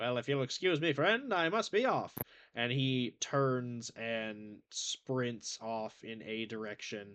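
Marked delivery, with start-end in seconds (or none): 0.0-2.1 put-on distorted 1940s radio voice, old-time mic sound. Voicing a townsperson excusing himself to leave: distorted 1940s radio voice. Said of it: "this guy's voice comes with the same distortion of a nineteen forties radio mic".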